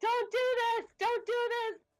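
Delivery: loud screaming, yelling. Stabbing a suddenly gigantic foe in character with a rapier: screaming. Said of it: "while screaming".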